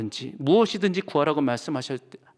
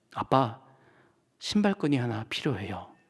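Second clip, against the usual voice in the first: mock cautious, very careful, shaky, trembling voice; 3 semitones lower, 4 dB quieter than usual. Retelling a girl's quiet request to her father: imitating a very careful trembling voice. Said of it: "아주 조심스럽게 떨리는 목소리로 말합니다".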